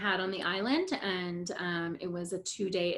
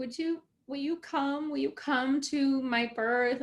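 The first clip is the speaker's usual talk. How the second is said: mock crying, much higher, slower; 5 semitones higher than usual. Retelling her past plea to a woman she had bonded with, imitating herself crying.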